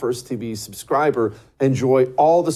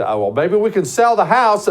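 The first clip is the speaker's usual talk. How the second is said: frantic worried voice, rattled off fast, rising pitch; 7 semitones higher, 4 dB louder than usual. Imagining a viewer who owes taxes, speaking in a mock frantic voice. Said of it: "maybe you're sitting there frantic".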